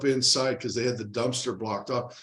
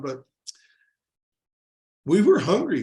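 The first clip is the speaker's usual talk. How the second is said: moved, heartfelt, emotional, raised and swooping pitch; 4 semitones higher, 5 dB louder than usual. Telling Sean a personal story, getting emotional. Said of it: "I get so emotional when I talk about this".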